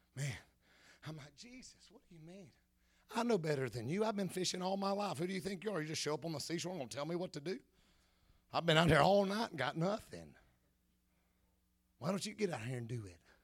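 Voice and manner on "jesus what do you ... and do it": huffy, put-out, indignant bad-attitude tone. Acting out talking back to jesus: acting out a bad attitude. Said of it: "I'm the only one that gets a bad attitude".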